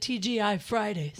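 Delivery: ordinary talk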